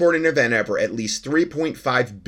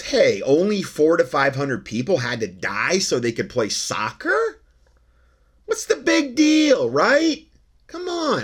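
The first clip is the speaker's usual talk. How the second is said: heavy, dripping, swooping sarcasm; 4 semitones higher than usual. Commenting on workers who died building for a soccer tournament: sarcastic. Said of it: "I'm being sarcastic".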